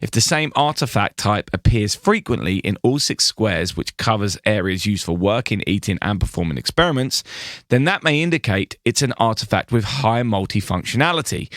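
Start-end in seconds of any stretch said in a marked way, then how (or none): none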